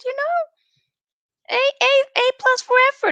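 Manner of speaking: super high voice.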